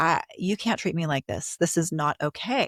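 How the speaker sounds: plain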